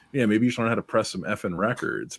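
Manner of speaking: ordinary talk, nothing marked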